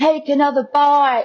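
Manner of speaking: put-on Australian accent. Retelling what the filming partner said during a food shoot: imitating an australian accent. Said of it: "in his Australian accent".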